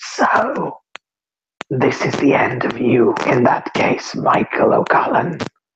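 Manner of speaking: harsh, grasping rasp like needles on chalkboard. Voicing a seated figure who greets a dead character: grasping, rasping voice. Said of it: "in a grasping, rasping voice that sounds like needles on a chalkboard".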